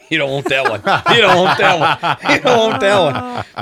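high, loud voice, laughing while speaking.

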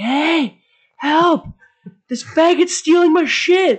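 shrill, very high, stretched-out yell. Retelling a woman yelling as a man walks off with her garbage bag, imitating her yell. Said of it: "she starts yelling out".

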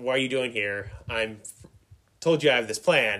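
ordinary delivery

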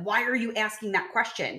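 put-on aggressive, demanding tone. Retelling how a man grabbed a woman by the shoulders and shook her, mock-aggressive. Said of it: "got like real aggressive about it".

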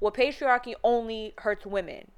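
ordinary delivery

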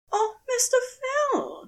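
very high-pitched, sudden crying out. A woman answers a heartbroken man, crying out. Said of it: "Lizzie cried out".

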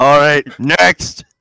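exaggerated deep put-on voice. Imitating a friend ending his turn: Andrew impression, much deeper voice. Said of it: "our Andrew impressions just gives him, like, a ten times deeper".

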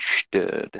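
whispered, suave spy-film voice. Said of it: "You gotta say it like that".

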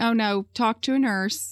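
ordinary talk

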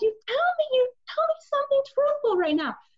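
very high-pitched screaming. Recounting an argument with someone refusing to be truthful, retelling own screaming. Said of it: "I'm seriously screaming".

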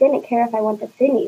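ordinary delivery

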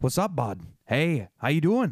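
upstate New York intonation. Describing how upstate New Yorkers talk, the speaker imitates them: upstate New York accent. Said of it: "it's just this intonation of the delivery".

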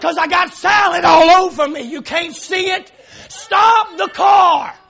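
put-on furious yelling at full blast, very loud. Speaker re-enacting yelling at her in the car, retelling a mad scream. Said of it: "Now I'm mad".

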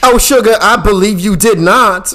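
exaggerated high, loud, sassy put-on woman voice.

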